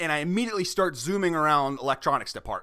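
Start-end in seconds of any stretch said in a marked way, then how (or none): none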